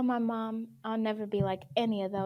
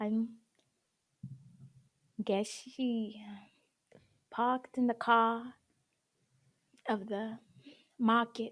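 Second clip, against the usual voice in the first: put-on Boston accent. Podcast co-host trying out a mock Boston accent. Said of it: "How's their accent?".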